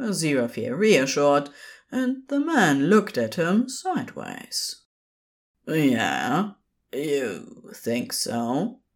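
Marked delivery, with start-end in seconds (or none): 5.7-8.7 very slow, low, drawn-out, reluctant, grudgingly hopeful. A man answers the one reassuring him, reluctantly hopeful. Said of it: "frowning in reluctant hopefulness".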